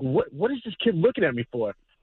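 ordinary talk, nothing marked

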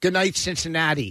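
ordinary talk, nothing marked

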